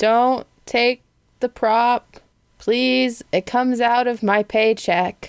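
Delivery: very tired, weary, exhausted voice. Narrator voices Sir Bottom Rock speaking from the corner, very tired. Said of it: "It's very tired".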